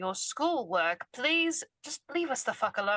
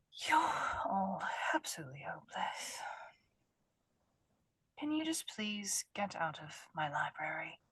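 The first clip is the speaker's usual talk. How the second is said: soft, hushed voice; 3 semitones lower, 7 dB quieter than usual. In a role-play game, a character in a library speaks quietly. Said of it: "saying it quietly because it's library".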